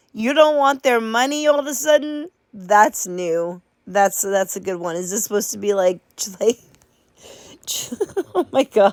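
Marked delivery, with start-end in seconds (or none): 5.0-9.0 talking through laughter. Mocking another speaker's claim of not wanting money, laughing while talking. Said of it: "I can't stop laughing".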